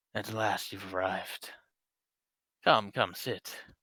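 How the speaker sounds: put-on crackling old crone voice, dry like weeds. Narrating a scene, the speaker voices a crone welcoming you: crackling crone voice. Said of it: "her voice crackles like dry weeds".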